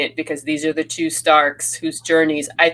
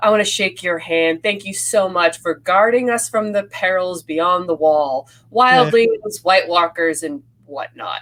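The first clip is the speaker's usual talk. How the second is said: smug, condescending sarcasm with falsely grateful tone; 3 semitones higher than usual. Quoting a favorite scene to another speaker, imitating Jaime's sarcastic, condescending delivery. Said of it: "he is so sarcastic and so condescending".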